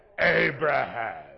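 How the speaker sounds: very low, growly voice from deep down. Speaker voices God calling Abraham like Charlton Heston would, growly Charlton Heston God voice. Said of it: "that's more growly there".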